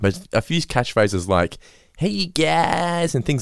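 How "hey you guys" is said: high-pitched nasal cartoon voice, higher. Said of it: "the higher pitched nasally voice".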